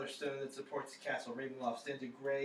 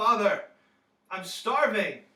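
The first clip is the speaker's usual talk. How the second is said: put-on very loud, high-pitched young man's outcry; 8 semitones higher, 15 dB louder than usual. A young man on his knees, praying beneath the chapel floor, calls to Father: young man crying out. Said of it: "you hear a young man's voice cry out".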